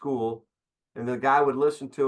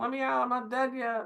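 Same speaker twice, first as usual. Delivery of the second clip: very high, far-off ventriloquist's thrown voice; 12 semitones higher than usual. Joking about someone who throws their voice at funerals, the speaker plays it out, thrown voice. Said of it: "I like to throw my voice at funerals".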